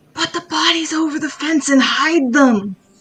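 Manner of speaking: loud, carrying stage whisper. Voicing Corey telling everyone to hide the bodies: loud whisper. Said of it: "Corey's gonna loudly whisper to everyone".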